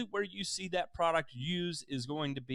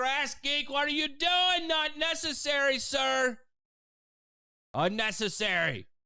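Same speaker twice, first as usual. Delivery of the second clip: high, loud scream. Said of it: "I don't know why I'm screaming like that".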